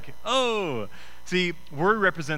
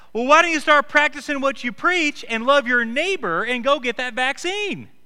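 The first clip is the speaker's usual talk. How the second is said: mock, very high, real loud, shrill scolding; 10 semitones higher, 6 dB louder than usual. Retelling a woman's remark in a crowded foyer, imitating her getting real loud. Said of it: "She gets real loud".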